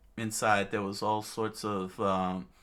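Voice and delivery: ordinary talk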